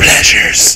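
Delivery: soft, hushed whispered word. Imitating a sales lady at Hecht's who would spray: whispered 'pleasures'. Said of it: "whisper like".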